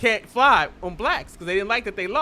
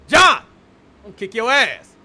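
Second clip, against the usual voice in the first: loud, tough delivery; 6 dB louder than usual.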